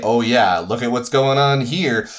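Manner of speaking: usual speaking voice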